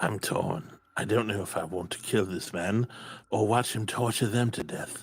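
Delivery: hushed whisper. In a tabletop game, a player's character confides to a companion, whispering. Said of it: "I whisper to Clay".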